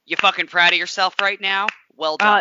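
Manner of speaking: put-on sarcastic jab. Imagining how he would have reacted on pit road, mock-sarcastic like Jack Harvey. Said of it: "Jack Harvey sarcastic asshole of like".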